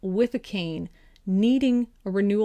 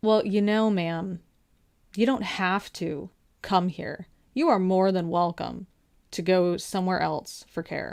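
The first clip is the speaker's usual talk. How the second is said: put-on snooty, snotty, condescending, talking-down tone. Retelling what the patient advocate told the speaker, mocking a snotty voice. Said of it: "in that like snotty voice".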